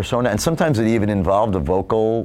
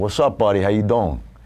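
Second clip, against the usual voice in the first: put-on Queens street-kid accent. Recalling growing up in Queens, talking like the local street kids. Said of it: "the local kids who talk like this from Queens".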